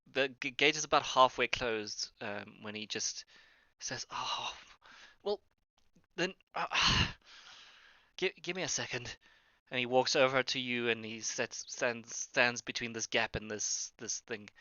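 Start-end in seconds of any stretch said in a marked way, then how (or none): 4.1-9.2 winded, breathless, out-of-breath, pitched-up voice. Voicing a character who stops at a half-closed gate: acting out of breath. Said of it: "looks around, out of breath".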